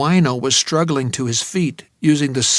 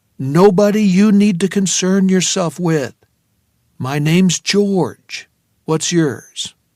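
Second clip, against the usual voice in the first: calming, soothing, reassuring, pitched up; 5 semitones higher, 4 dB louder than usual. Narrator George speaks to a man scrambling away from him, in his most soothing voice. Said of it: "I said in my most soothing voice".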